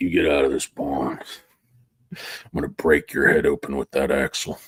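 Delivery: very low, deep, threatening voice. Acting out a threat to a young child over dinner: Sam Elliott impression. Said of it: "my Sam Elliott impression where he threatens a young child".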